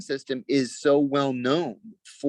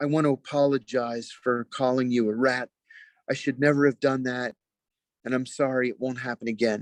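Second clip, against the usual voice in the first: timid, sheepish, meek, humble tone. Retelling how an injured man came up to apologize, imitating meek speech. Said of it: "he says very meekly".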